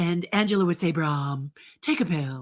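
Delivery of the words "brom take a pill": sexy voice pitched low. Showing a TV character's line: sexy low voice as Angela. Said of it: "very sexy, low-voiced".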